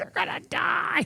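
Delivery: mock rough, very high-pitched screaming cry. Retelling a wife's warning at a cliff edge: imitating someone screaming. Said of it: "She's screaming at me".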